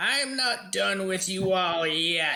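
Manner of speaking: high-pitched, shouted battle-cry yell. Voicing Agatha popping up from the floor, worse for wear: Agatha yelling. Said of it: "she yells out".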